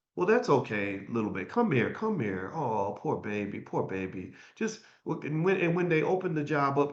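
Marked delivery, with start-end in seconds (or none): 0.1-5.2 fake, patronizing soothing in swooping sing-song. Acting out what would be said to someone if hated: mock soothing, insincere. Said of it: "if I hated you, then what I would say is".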